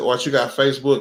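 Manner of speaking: plain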